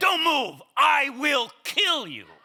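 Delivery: loud, high, threatening mock robber voice. Retelling a bank robbery to other actors, imitating a robber yelling. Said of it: "I get to the point where he says".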